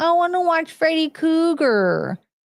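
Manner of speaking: put-on very high small-child voice. Retelling what a sister used to say as a young kid, in a little kid voice. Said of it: "in her little kid voice".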